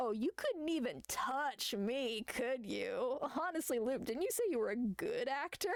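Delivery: smug, self-satisfied, teasing taunt. Retelling a story scene, a character smirking at the attacker. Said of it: "she just smirks and goes".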